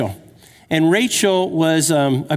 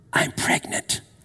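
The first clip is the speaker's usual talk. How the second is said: hushed, intimate whisper. Retelling how the wife broke news at the gym: imitating wife whispering. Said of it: "And she whispered to me".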